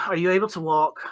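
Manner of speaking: bored, uninterested, can't-be-bothered voice. Narrating a scene, voicing an elf who asks if you can walk: bored elf voice. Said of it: "the elf kind of boredly says".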